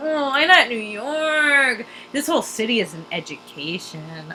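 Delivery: mock creepy, suggestive tone in a slow drawl. Retelling how a friend's dad talked about New York: imitating a creepy sexual tone. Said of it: "in, like, a really creepy sexual way".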